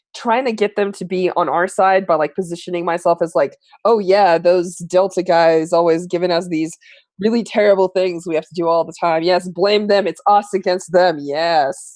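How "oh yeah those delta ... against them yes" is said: ordinary delivery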